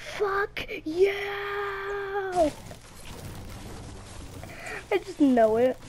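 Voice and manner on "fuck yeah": higher mock yell, like cheering. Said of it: "he's gonna ye-, yell".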